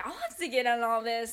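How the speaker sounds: put-on playful, joking tone. Retelling a speakerphone call, quoting mom's remark jokingly. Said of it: "my mom jokingly was like".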